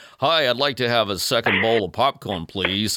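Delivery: fake American accent, English accent dropped. Getting more popcorn at The Patriot in America, the speaker drops their English accent for a put-on American accent. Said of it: "immediately abandoned my English accent".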